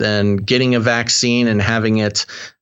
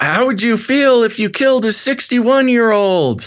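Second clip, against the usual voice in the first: mock yelling, higher pitched; 12 semitones higher than usual. Retelling what a buddy's mom said over the phone: imitating someone yelling. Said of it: "on the phone yelling".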